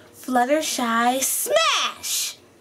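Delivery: slow, stretched delivery.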